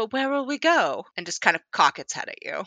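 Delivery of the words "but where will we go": uncannily human-sounding voice with raised pitch. One of the creatures speaks in a different dialect; strangely human voice. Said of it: "strangely human voice".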